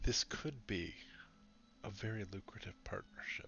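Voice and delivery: breathy, hushed whisper, barely voiced. Voicing a character leaning close to a player's ear: whispering. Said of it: "whispers in your ear".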